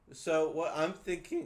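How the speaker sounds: voice cracking. Explaining what they were thinking of doing, voice cracking. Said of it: "that was a terrible voice crack".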